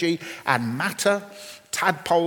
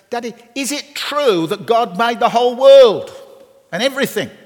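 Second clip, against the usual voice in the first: put-on very loud, high, uninhibited child blurting; 6 semitones higher, 9 dB louder than usual. Retelling his son's sudden question among men reading newspapers, in a loud voice. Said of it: "in a loud voice".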